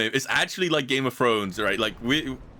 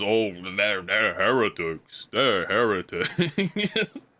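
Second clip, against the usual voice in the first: mocking impression of a man, much slower; 3 semitones lower than usual. Showing how a guy people make fun of actually sounds, mocking impression of him. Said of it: "He actually sounds like this".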